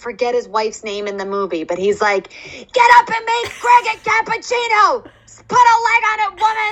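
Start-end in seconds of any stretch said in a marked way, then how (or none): 2.3-6.7 very high, loud hollering yell. Retelling a favorite movie scene, imitating Robert De Niro yelling. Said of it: "the way he yells".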